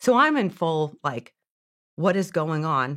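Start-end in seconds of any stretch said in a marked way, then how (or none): 2.0-3.0 mock panicked freaking out. Retelling own reaction during the phone call: imitating own past panic. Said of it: "freaking out".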